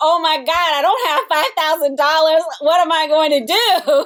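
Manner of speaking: high freaked-out alarm. Retelling own thoughts on waking to news of stolen stuff: imitating own panic. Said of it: "And I was really freaking out".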